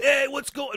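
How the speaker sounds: put-on heavy New York accent, high. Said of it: "Big New York accent".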